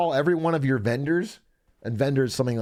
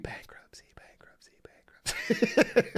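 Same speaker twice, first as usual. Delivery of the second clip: playful, taunting, breathy whisper; 10 semitones higher, 4 dB quieter than usual. Speaker demonstrates what to say when talking to your bank, in a teasing whisper. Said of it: "Can I whisper bankruptcy like a tease?".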